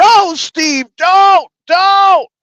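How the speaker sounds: put-on, very slow, high, stretched-out yelling. Retelling yelling at the phone while listening: imitating own past yelling. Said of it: "I'm yelling at my phone".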